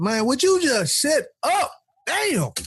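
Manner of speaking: high, exasperated, fed-up outburst. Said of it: "and you be like".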